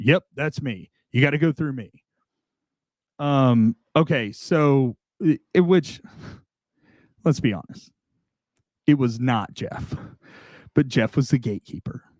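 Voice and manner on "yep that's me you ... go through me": put-on very serious voice. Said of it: "Very serious".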